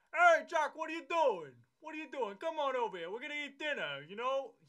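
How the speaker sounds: put-on very high, very loud Bronx accent. Telling how a bronx construction worker talks, imitating a bronx accent. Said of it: "He talks like that".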